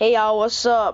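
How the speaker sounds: switched-up slangy, casual put-on voice. A student explaining how he changes his voice around peers, slangy casual voice. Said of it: "change my voice".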